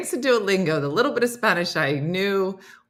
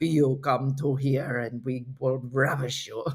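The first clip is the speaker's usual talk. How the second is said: very deep, fake sultry Spanish man's voice; 7 semitones lower, 6 dB quieter than usual. Imitating the Duolingo voice of a sexy Spanish guy: bad sexy Spanish guy voice. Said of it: "I can't even do the voice".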